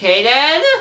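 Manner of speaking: very high, loud, cracking voice. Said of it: "my voice just cracked there".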